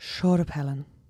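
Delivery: Dublin accent with added breathiness. Practising a phrase as the coach says to add breath; breathy Dublin accent. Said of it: "just add a bit of breath".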